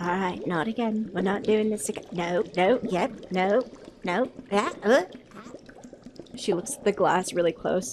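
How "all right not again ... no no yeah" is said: put-on halfling voice, muttering. Voicing a halfling who mutters while mixing something: voicing a halfling muttering to herself. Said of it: "You see the halfling ... and she's like".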